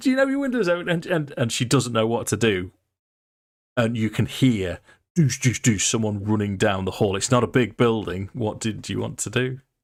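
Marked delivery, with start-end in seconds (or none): 0.0-0.9 shrill, very high shrieking scream. Voicing a farmer's wife holding up a bucket: screaming. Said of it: "she's screaming now".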